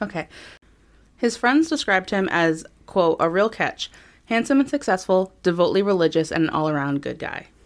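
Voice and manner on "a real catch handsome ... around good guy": ordinary talk, nothing marked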